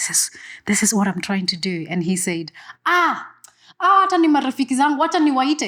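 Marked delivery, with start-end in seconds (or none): 0.0-1.9 whispered voice. Retelling what they said to a security guard, re-enacting a whisper. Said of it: "again I'm whispering".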